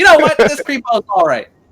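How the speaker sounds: very high, loud voice, laughing through it. Voicing Lulu, who speaks in his voice: Lulu speaking in his voice. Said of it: "Lulu talked in his voice".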